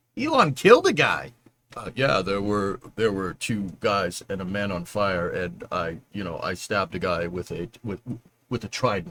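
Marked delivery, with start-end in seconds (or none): 2.2-9.1 weak impersonation, close to normal, low and soft. Joking that Elon killed a guy, speak as him in a bad Elon Musk impression. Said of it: "I can't do a good Elon impression".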